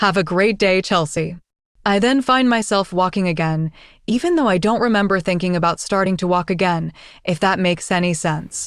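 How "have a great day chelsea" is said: mock smug tone. Retelling a dream where a former classmate speaks: imitating a smug remark. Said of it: "kind of smugly".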